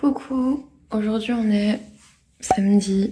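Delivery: groggy, just-woke-up morning voice. Starting a saturday vlog entry, apologizing for her morning voice. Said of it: "j'ai ma voix du matin".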